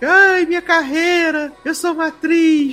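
very high, tearful crying voice. Retelling how Cat reacted after the video went viral, imitating Cat crying.

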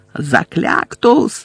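loud shouting, yelled. Neville aims a spell at the Death Eaters one by one, shouting. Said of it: "закричав Невіл".

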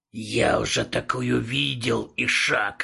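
hissing. A demon in a car, watching Travis walk to the house, hissing. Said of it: "прошипел он".

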